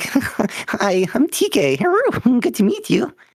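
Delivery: high squeaky voice, very slow and sing-song. Imitating how they sounded when they started talking, high squeaky voice. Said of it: "I had a little bit of like the high little squeaky voice".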